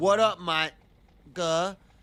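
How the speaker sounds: Southern US accent and pronunciation. Speaker giving an example of how someone from the south might say it, southern us accent. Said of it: "If I'm from the South and I pronounce the word water as water".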